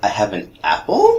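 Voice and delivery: rising question-like pitch on apple. Showing a statement made to sound like a question, rising on apple. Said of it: "if you just make it sound like a question".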